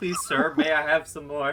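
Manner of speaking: plain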